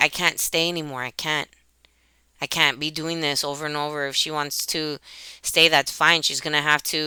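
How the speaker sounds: ordinary delivery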